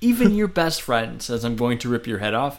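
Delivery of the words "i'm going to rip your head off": put-on calm, threatening voice. Repeating the wrestler's threat the way he said it: Batista's calm threat. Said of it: "in that tone, that calmly".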